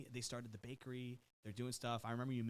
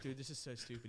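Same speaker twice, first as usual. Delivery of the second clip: normal talking voice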